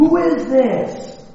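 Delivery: play-acted hollering. Storyteller acts out a boy calling to an unknown voice; retelling a boy's shout. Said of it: "And so he shouted again".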